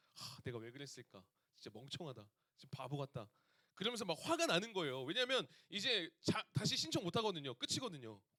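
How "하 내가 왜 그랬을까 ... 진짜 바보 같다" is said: low, soft, dazed, dejected muttering. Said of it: "멍 때리면서".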